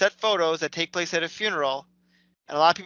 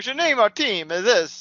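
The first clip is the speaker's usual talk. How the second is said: put-on spoken with Russian accent; 4 semitones higher than usual. Describing how a movie team gets its name, doing an impression of the Russian guy. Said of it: "that's my impression of the Russian guy".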